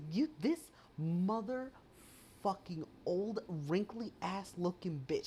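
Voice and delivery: mock furious, fed-up outburst. Recounting a frustrating moment, the speaker retells what they said, retelling a livid outburst. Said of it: "Like I was livid".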